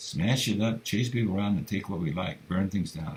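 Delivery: ordinary delivery, nothing marked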